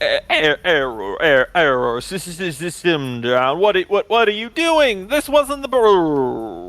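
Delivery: glitching, stuttering, swooping malfunctioning system voice. Voicing a computer called Father as it breaks down, glitching voice. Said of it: "you hear Father's voice going".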